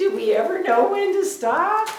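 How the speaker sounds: very high, very loud, laughing through words. Painter wondering whether to stop working on a piece, laughing while talking. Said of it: "I'm sorry I'm laughing".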